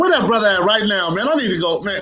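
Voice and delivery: eager, excited voice pitched high.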